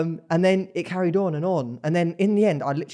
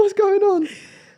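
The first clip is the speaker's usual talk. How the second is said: mock panic, higher and louder; 4 dB louder than usual. Retelling holding a partner's nose while asleep: imitating own past panic. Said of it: "I'm panicking".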